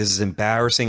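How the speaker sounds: ordinary talk, nothing marked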